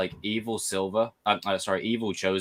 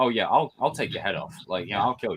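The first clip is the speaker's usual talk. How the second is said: ordinary talk, nothing marked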